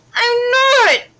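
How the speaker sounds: very loud, high-pitched shouting. A boy answers a girl who accuses him of lying, shouting back. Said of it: "Caleb shouted back".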